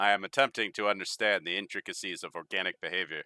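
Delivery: robotic character voice. Asked how he's settling in, the robot answers in a robot voice. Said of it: "I'm just doing robot voice guy".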